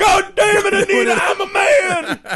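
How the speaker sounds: very high, very slow, drawn-out howling scream. Quoting a husband's outburst at his wife: imitating a character screaming. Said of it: "he's just screaming to the gods".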